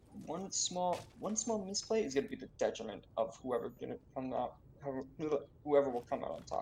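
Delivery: stuttering, stumbling over repeated words. Commentating on a match, stuttering. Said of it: "Excuse me for my stutter".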